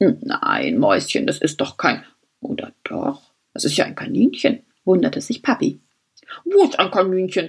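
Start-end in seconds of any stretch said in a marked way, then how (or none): 6.4-7.5 mumbled, muffled by a toothbrush in mouth. A father steps to the open window with a toothbrush in his mouth, mumbled with toothbrush in mouth. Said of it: "nuschelte Papa".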